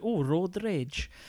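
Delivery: exaggerated Welsh accent. Recalling spotting a game in a shop, in a Welsh accent. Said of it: "What am I putting one on for?".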